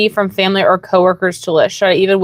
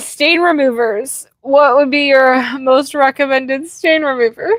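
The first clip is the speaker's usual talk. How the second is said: laughing through words, giggling, pitched up; 5 semitones higher than usual. Reading a viewer question aloud to the other speaker, laughing while talking. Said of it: "Why are you laughing at that?".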